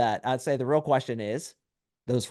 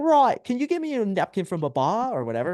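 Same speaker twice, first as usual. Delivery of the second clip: put-on animated, bouncy Australian accent, pitched up; 7 semitones higher than usual. Retelling how she asks him for a napkin from the bar, in an australian accent. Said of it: "Ask me in an Australian accent".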